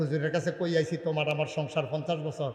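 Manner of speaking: very soft, low, gentle voice.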